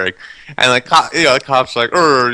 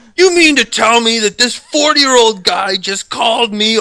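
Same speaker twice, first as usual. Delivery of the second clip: put-on angry voice, higher pitch; 10 semitones higher than usual. Retelling what a cop said on the phone: imitating an angry cop. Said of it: "the cop was pissed".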